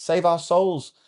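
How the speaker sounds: put-on speaking in an Essex accent. Retelling their reply to a student's question, in an Essex accent. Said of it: "in my Essex ac- accent".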